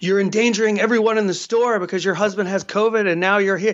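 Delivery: ordinary delivery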